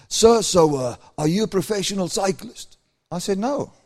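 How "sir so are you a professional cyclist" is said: put-on deep male voice, slower. Retelling a man's question after getting into his car, in his deep voice. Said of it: "he comes with his deep voice".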